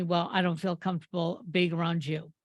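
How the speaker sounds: normal talking voice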